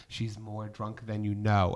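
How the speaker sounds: hushed whisper. Telling a story, quoting what she whispered to the speaker: retelling a whisper. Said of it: "she just whispers".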